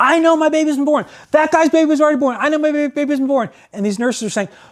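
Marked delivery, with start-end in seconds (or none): 0.0-3.5 mock worked-up, insistent, agitated yelling, pitched high. Retelling a man at the nurses' station in the ward, retelling a man yelling. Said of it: "yelling at the nurses".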